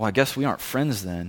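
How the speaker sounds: mock muttering under breath. Retelling what a kid said after the speaker walked off: imitating muttering under breath. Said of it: "I heard him utter under his breath".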